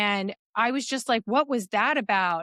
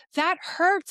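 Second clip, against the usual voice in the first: play-acted, shrill, very high scream of pain; 9 semitones higher than usual. Retelling own words while being hit: imitating own screaming. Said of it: "and I'm screaming".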